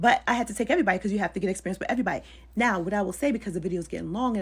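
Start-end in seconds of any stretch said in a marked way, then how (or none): 0.0-2.2 rushed, very fast talk. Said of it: "I'm talking fast".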